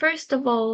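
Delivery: ordinary delivery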